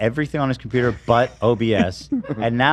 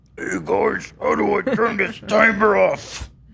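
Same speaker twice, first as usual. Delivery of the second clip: drawn-out, slow, high, raspy, creaky put-on voice; 8 semitones higher than usual. Doing an impression of Ian for the others, Ian impression. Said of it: "You want to hear my impression of of uh, Ian?".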